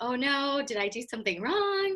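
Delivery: worried, frightened, panicky voice. Retelling being called into a room by mom, retelling being scared. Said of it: "I was so scared".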